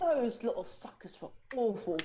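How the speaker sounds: soft whisper under the breath. A character turns to the group and speaks, whispered. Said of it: "She whispers this".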